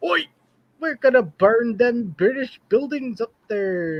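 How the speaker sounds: bad put-on British accent. Acting out what the british troops say, in a bad british accent. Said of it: "and whatever British accent".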